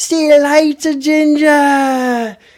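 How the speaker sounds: high, loud, taunting voice.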